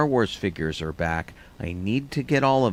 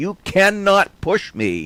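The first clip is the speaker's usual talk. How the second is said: shrill, very high, loud yelling; 10 semitones higher, 7 dB louder than usual. Retelling being crushed against store pegs by a crowd: imitating himself yelling. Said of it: "I ended up yelling at these people".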